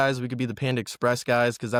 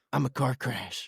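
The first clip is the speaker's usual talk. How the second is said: put-on chaotic commercial voice, quieter; 5 dB quieter than usual. Imitating the Allstate chaos guy from the commercials: Allstate chaos guy impression. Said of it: "The Allstate guy? Where he's like".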